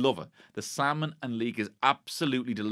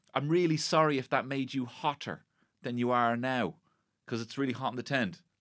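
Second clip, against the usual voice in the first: put-on very sweet, sincere sorry tone. Retelling a contestant's apology about the hot tent, imitating a sweet tone. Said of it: "he says real sweetly".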